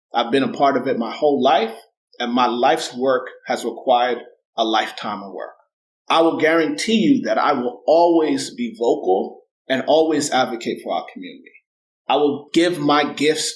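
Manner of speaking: ordinary talk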